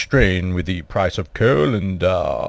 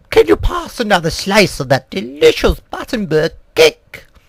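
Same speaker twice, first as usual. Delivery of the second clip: courteous, gracious, polite tone, pitched up; 5 semitones higher than usual. Retelling serving cake to the Queen, who asks for another slice, imitating the Queen. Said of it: "not in such a deep voice".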